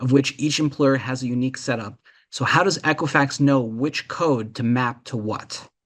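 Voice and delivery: plain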